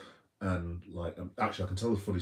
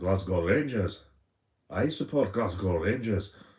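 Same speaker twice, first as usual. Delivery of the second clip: not-very-good, loud, put-on Scottish accent; 6 dB louder than usual. Quoting a man's reply, in a not-very-good put-on scottish accent. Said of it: "I'm not very good at the Scottish accent, but here goes".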